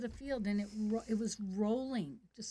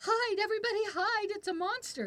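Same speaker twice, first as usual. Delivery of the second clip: very high, shrill, loud acted yelling; 11 semitones higher, 4 dB louder than usual. Retelling yelling to the class during an earthquake, retelling a yell. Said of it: "And I'm yelling".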